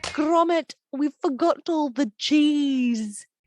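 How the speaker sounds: bad, exaggerated put-on British accent. Retelling a childhood bit with bared teeth, bad exaggerated British accent. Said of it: "say in my worst British British accent".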